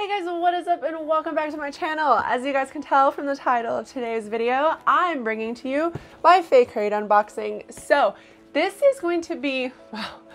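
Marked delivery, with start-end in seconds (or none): 7.7-10.1 cracking, breaking, sick-sounding voice. Youtuber opening a fake crate unboxing video while sick, voice cracking from sickness. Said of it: "my voice is cracking because I'm sick".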